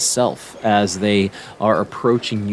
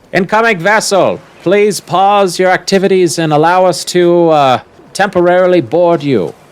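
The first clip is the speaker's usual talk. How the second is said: very loud, very high-pitched booming voice; 9 semitones higher, 9 dB louder than usual. A voice hails an incoming vessel asking to board, loud booming voice. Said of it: "you hear a loud booming voice".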